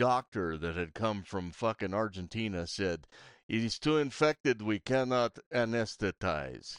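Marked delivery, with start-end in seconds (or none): 3.5-6.8 put-on Russian-accented voice. Retelling what the doctor said about the infection, in a Russian accent. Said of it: "doing a Russian accent?".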